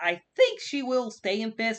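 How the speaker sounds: voice briefly breaking, cracking high mid-line. Discussing standings late in a race season; voice cracking. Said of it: "a little voice crack there".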